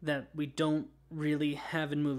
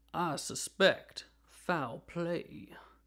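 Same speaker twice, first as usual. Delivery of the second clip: very slow, exaggerated Southern drawl, every word stretched; 2 semitones higher than usual. Imagining a film detective saying his catchphrase, Benoit Blanc Foghorn Leghorn voice. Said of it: "Kind of a foghorn leghorn voice".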